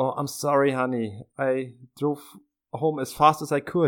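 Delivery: put-on Styrian accent on English words. Quoting Harry's original English line: Harry's Styrian accent. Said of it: "sagt er so in seinem steirischen Akzent".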